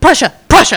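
blurted out high and loud, hurried and rushed.

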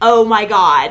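loud, startled exclamation.

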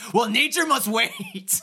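put-on shrill, very high little-kid shout. Retelling how a kid yelled at someone leaving the table: imitating a kid yelling. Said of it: "And then the kid just yells".

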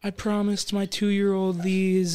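put-on woman's bawling, crying voice. Retelling how a customer at checkout reacted when her card failed: imitating a woman bawling. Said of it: "she was just bawling".

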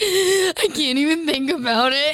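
put-on teary voice, crying through the words. Retelling how Carly spoke with her eyes welling up: imitating Carly tearing up. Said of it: "they're welling up".

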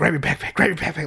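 nervous, hushed, urgent whisper, repeated over and over. Retelling a tense military checkpoint stop: imitating mom whispering. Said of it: "my mom keeps whispering".

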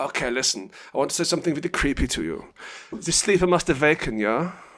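fake German accent throughout. Saying something prophetic and creepy before a goodbye: put-on german accent. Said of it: "Let me get back to German".

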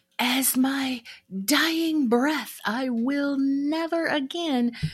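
very high, slow, drawn-out, grand, dramatic delivery. Retelling a vow made after a breakup: Scarlett O'Hara vow. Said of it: "Scarlett O'Hara vow".

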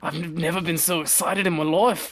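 put-on Scottish accent. Speaking to Jose and the show's listeners, finally doing a Scottish accent. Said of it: "I can finally do my Scottish accent".

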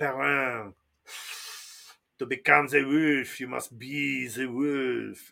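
put-on low-pitched voice with French accent. Speaker acting out the wolf teacher instructing his student, Hopper with French accent. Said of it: "do not ever bring that French accent".

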